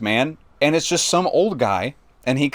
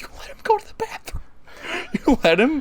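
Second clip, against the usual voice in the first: acted angry tone, higher; 12 semitones higher, 3 dB quieter than usual. Retelling being furious at a coworker for allowing the bathroom visit: imitating own angry words. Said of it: "I was so pissed at Gerald".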